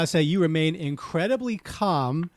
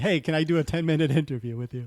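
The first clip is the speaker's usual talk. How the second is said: normal talking voice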